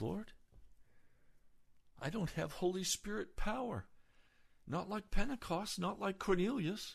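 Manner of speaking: mock high, slightly whiny, pleading little tone. Retelling own complaining prayer to the Lord: imitating own whining prayer. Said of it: "a little bit of a whine in my voice".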